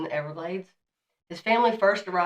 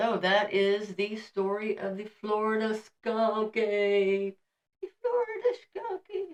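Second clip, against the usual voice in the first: put-on very high, soft little old lady voice; 4 semitones higher than usual. Wrapping up a story for a listener, the speaker talks in a little old lady voice. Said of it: "a little old lady talking".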